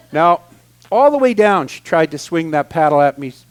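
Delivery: ordinary talk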